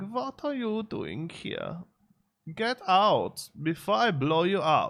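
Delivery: put-on hammed-up German accent, very high, very slow. Imitating how a man talks, in an over-the-top german accent. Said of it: "He does have a really sort of over the top German accent".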